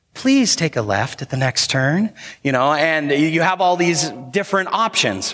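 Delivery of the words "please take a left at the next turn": polite, sweet, gentle feminine navigation voice. Describing GPS voice options, imitating the soft, sweet, feminine one. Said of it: "the real soft, sweet, feminine voice that is like".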